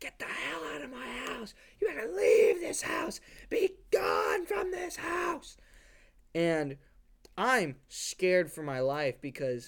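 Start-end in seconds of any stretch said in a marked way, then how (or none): 0.0-5.6 very high, piercing, shrill scream. The speaker recalls a man screaming at them at age three, retelling a scream. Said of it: "screaming at me, like".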